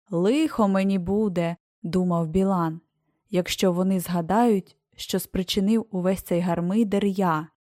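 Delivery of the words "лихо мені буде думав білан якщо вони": plain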